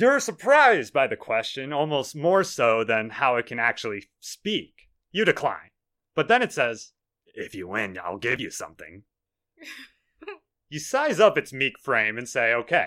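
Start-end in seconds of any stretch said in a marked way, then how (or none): 7.3-9.0 raspy, low, rasping little creature voice. Narrator voicing a meek creature offering a prize for a wrestling match, raspy creature voice. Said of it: "It says with a raspy voice".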